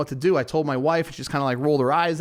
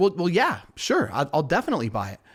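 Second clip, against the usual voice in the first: usual speaking voice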